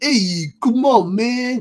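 put-on heavy, over-the-top New York accent, very high, loud. Describing the turtles' voices, mimicking Leo's over-the-top New York accent. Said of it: "this over-the-top, like, ... kind of accent".

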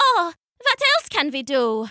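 plain

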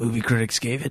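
hoarse, raspy gangster voice. Asked to do a movie trailer voice, the speaker tries it: raspy mobster voice. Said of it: "You sound like a raspy mobster".

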